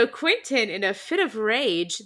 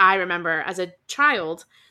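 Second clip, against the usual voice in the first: ordinary delivery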